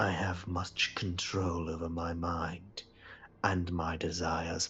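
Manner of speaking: slow, menacing, unvoiced whisper.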